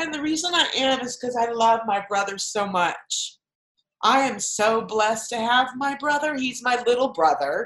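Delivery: tearful voice breaking, crying through words. Talking on a recording about a little brother, Mark: crying. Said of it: "I'm sorry, I'm crying again".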